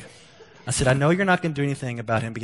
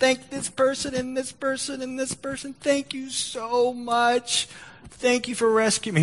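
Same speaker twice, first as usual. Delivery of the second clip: mock tearful, crying voice, higher pitch; 13 semitones higher than usual.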